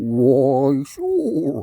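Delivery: loud, swooping underwater fish voice. Telling a fishing story, voicing a fish underwater. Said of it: "I was trying to do fish underwater".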